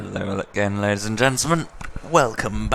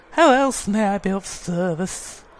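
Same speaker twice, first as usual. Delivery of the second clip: very high-pitched, ladylike female character voice; 11 semitones higher, 3 dB louder than usual. Playing through the game, speaker voices Missus Kabuto's lines in Missus Kabuto voice. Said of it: "I like doing her voice".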